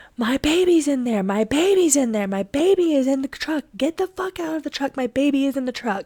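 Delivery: play-acted, high, frantic, desperate, pleading top-of-lungs scream. A parent retells a stranger trying to drive off in the truck, retelling a top-of-lungs scream. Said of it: "I am screaming at the top of my lungs".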